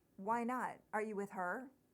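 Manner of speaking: ordinary talk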